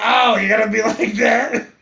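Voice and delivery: put-on voice of a woman. Retelling a woman who asked for a cigarette, imitating her voice. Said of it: "that's how she sounded".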